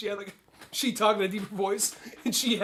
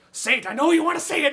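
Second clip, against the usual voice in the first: put-on screaming leprechaun voice, higher and louder; 7 semitones higher, 5 dB louder than usual. Acting out an imaginary leprechaun screaming at them: imitating a screaming leprechaun. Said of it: "screaming at us to yell".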